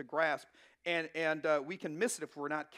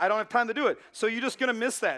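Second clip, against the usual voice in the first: normal talking voice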